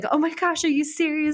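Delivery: put-on thrilled, high, excited screaming. Retelling how she reacted when the ring was found, imitating her excited screaming. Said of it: "she's like screaming in my ear".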